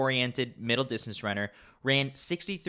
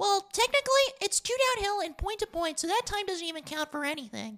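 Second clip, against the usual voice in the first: very high, extremely annoying, mocking voice. Reading a prompted sentence as a younger brother mocking his sister, most annoying voice imaginable. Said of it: "read the following sentence in the most annoying voice imaginable".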